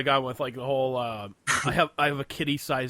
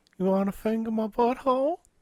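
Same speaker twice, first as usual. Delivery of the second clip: high-pitched cartoon old man voice; 9 semitones higher than usual. Joking about a creepy coworker: old guy from Family Guy voice. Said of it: "like the old guy on Family Guy".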